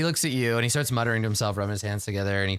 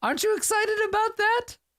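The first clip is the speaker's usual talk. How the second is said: very high-pitched put-on voice. Voicing Uncle Troilus comforting a patient in pain: Uncle Troilus character voice. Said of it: "It's just your old Uncle Troilus".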